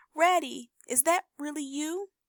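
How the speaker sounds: very high, weak, feeble little voice. Narrator reading a story aloud, a voice calling from a hole in a tree, feeble voice. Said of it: "came a feeble voice saying".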